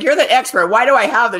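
loud, high, angry yelling. Recounting how a mom called and yelled at the speaker, retelling a mom yelling. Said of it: "She's like yelling at me".

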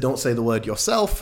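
plain

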